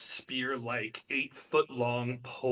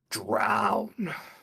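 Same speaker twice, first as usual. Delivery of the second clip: dropped, low voice on one word; 3 semitones lower, 4 dB louder than usual. Game master voicing a woman commanding a player, in a low voice. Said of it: "in a low voice, she says".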